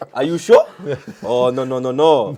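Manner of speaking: bad put-on French accent that sounds Swedish. After being asked for an accent for Makélélé, a bad Makélélé French accent. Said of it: "sounds like a Swedish fella".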